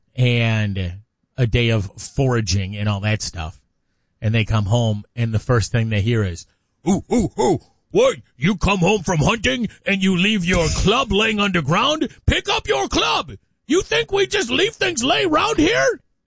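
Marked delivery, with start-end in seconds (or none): 6.9-16.0 very high, scolding, nagging cavewoman voice. Acting out a cavewoman scolding her husband about his club: cavewoman voice. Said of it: "they all talked like that back in the day".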